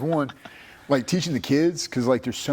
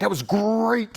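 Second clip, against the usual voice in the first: pitched-up pirate voice, pirate-style R in "great"; 8 semitones higher than usual. Speaker demonstrating their habit of saying R-words like a pirate, pirate voice. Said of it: "I say it like a pirate".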